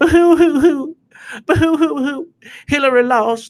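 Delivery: fake sobbing. Imitating angry Democrats who were crying: mock crying. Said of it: "the ones that were crying".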